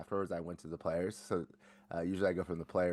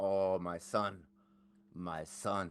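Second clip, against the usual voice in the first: heavy put-on Latin American accent, drawn out very slowly.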